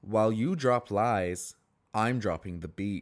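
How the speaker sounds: imitated dull, flat monotone delivery. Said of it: "so monotone and just so, like, almost dull".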